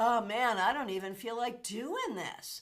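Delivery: plain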